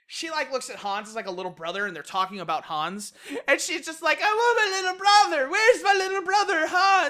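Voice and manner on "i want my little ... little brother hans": put-on very high, pitched way up, drunken stupor voice. Retelling a game scene, quoting a drunk character: imitating drunken speech. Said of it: "in this drunken stupor".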